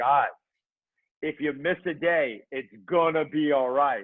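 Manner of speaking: put-on sarcastic reassurance. Describing getting sarcastic with the challenger sometimes, retelling sarcastic reassurance. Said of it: "I get sarcastic with the challenger sometimes".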